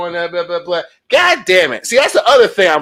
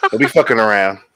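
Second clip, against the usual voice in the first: mock fatherly lecturing voice, lower pitch; 8 semitones lower than usual. Warning the audience to be careful and stay safe: put-on dad voice. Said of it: "That's Dad voice for you right there".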